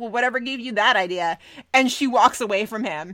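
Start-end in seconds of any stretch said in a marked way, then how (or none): 0.0-1.4 mock smug reply tone. Retelling how Crockett answered Natalie: smug Crockett imitation. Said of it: "Crockett responds very smugly".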